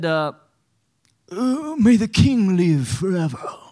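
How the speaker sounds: put-on sucking-up voice. Retelling how the tattletales addressed the king, in a mock sucking-up voice. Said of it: "I just imagine them talking like that".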